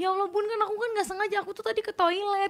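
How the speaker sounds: high-pitched pleading.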